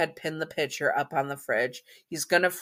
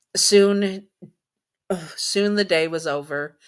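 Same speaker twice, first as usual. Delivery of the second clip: tearful, choked-up voice, slightly raised pitch; 3 semitones higher, 5 dB louder than usual. Telling a story about Jack and his son, the speaker is tearing up. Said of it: "I'm tearing up myself".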